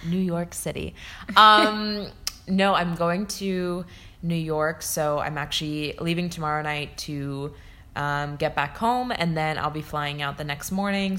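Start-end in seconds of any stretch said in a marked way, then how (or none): 0.0-0.9 put-on radio broadcaster voice. Answering where they're traveling this week: radio announcer voice. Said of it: "Says it in like a radio like voice".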